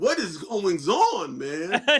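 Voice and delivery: slow, swooping, stretched-out sing-song comedian voice. Retelling what he asked then, in a Bernie Mac voice. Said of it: "in my Bernie Mac's voice".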